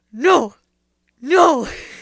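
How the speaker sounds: loud anguished "no".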